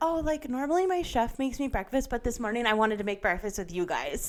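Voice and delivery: mock-sweet, rich put-on voice. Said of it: "it's like the".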